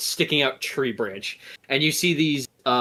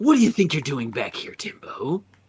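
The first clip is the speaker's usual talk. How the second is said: hostile, menacing, aggressive female snake voice; 3 semitones higher than usual. Repeating the snake women's threat for players who understand: aggressive snake woman voice. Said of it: "you guys can hear the whole, like".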